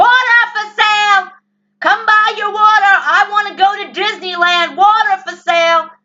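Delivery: put-on very high, very loud, shrill little girl yelling. Retelling what was heard outside a house: imitating a little girl screaming. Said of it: "screaming at the top of her lungs".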